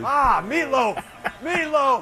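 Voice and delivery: high-pitched, rushed, comic yelling holler. Doing a Will Ferrell impression, yelling for meatloaf. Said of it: "[name]'s Will Ferrell impression".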